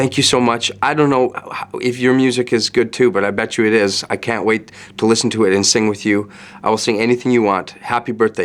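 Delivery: ordinary delivery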